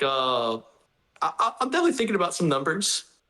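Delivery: mock stifled laughter, stumbling over "I". Retelling an interview answer from Max: imitating Max holding back laughter. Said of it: "trying not to laugh when".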